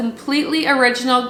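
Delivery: normal talking voice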